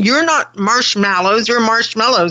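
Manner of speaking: plain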